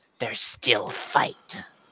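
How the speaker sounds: nauseating, soft, whispered monster voice. Game master voices what Wolfram hears behind him, a sickening voice. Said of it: "you can hear this this sickening voice".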